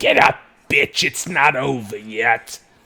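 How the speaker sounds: slow, cackling goblin voice. Voicing a goblin that cackles at a fallen player: goblin cackling. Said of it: "you hear this goblin cackling and going".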